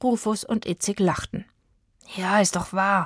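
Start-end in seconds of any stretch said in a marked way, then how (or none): 2.2-3.1 grumbling, muttered grumpily. Narrating Zora, still indignant after the mopeds left, answering the boys, grumbling. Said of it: "brummte Zora".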